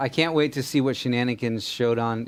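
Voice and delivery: ordinary talk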